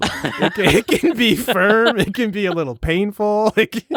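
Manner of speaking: high, giggling, laughing swoon.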